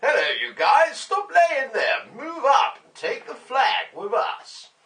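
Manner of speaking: very high, very loud, shrill, booming shouting. Showing a put-on voice for telling teammates to take the flag: Battlefield three voice. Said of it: "it's my Battlefield three voice".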